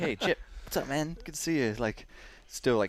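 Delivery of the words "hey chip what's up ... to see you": put-on breathless huffing and puffing, higher. Retelling greeting someone after running up, imitating huffing and puffing. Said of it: "still, like, kinda huffing and puffing".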